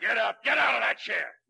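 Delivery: raspy, loud, rough, high-pitched shouted voice. An officer interrogates a boy accused of killing Bartelli, yelling. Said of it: "Don't yell at me".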